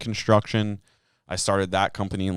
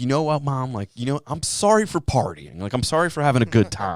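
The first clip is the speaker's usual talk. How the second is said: mocking, sarcastic, sing-song tone, pitched up; 5 semitones higher, 3 dB louder than usual. Retelling a brother's line to a mom during a fight: imitating a sarcastic retort. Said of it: "he was being sarcastic".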